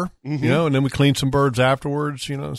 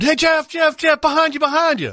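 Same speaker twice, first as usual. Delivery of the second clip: mock hollering call, much higher and slower; 13 semitones higher than usual. Explaining how people call out to each other when they can't see the birds, imitating someone hollering. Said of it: "you'll be like somebody be hollering".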